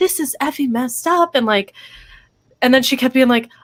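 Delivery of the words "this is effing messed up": play-acted raised, pitched-up, frustrated voice. Retelling how a woman upset over her money spoke to someone; imitating a raised voice. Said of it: "raising her voice and she's like".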